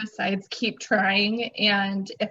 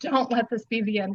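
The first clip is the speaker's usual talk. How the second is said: put-on desperate, pleading voice. Retelling a prayer in a tiny ICU room: imitating own pleading prayer. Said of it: "pleading with God".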